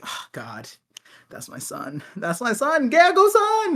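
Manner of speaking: mock grudging reluctant pride, high and swooping. Imagining a character's reaction to his son: Harold reluctantly rooting. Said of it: "reluctantly rooting for him".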